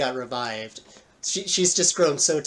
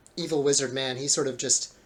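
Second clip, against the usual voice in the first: plain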